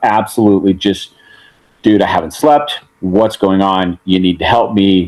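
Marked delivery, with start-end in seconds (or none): 1.8-5.1 put-on panicked, frantic pleading voice. Retelling stalling a truck in highway traffic: retelling own panicked plea. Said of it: "freaking out".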